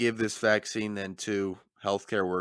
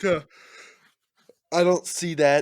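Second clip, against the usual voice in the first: talking through a yawn, much higher, louder; 8 semitones higher, 7 dB louder than usual. Speaker disagrees with another speaker's point, yawning. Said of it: "I'm yawning quite a bit".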